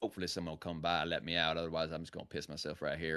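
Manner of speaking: very low, quiet Tennessee accent, dog voice. Voicing his dog waiting silently at the door to go out, tennessee accent. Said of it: "my dog is from, uh from, uh, Tennessee, so my dog talks like this".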